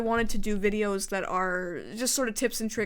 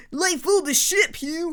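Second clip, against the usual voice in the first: loud, grating, pitched-up, over-inflected annoying speech; 8 semitones higher, 5 dB louder than usual. Describing a person whose voice annoys him, imitating Gary's inflections. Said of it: "That kind of thing".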